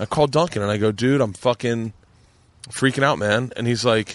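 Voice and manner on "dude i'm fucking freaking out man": ordinary talk, nothing marked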